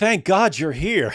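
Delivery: mocking sarcastic tone. Telling someone who missed it what a man said to another, imitating his sarcastic remark. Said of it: "like sarcastically".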